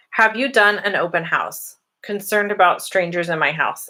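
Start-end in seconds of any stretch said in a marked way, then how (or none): none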